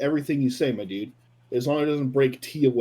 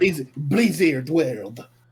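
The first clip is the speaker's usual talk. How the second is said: odd, weird, mock French accent. Mimicking how she announced the map name: weird French-like accent. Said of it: "like a French accent".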